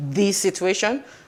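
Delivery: "the situation" stressed and slowed down.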